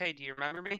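plain

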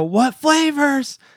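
put-on, very high-pitched, pissed-off, irritated voice. Recalling someone who kept demanding their wing flavors; mock-angry question. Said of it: "He was like pissed".

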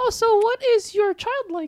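put-on very high-pitched, babyish voice. Telling a story about talking to strangers online, speaker imitates one, baby high-pitched voice. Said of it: "This is a baby high-pitched voice".

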